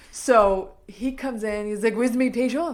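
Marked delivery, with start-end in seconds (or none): 1.9-2.7 adorable put-on French accent, louder. Retelling a story, quoting a man who just came in, adorable French accent. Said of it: "the most adorable French accent I've ever heard".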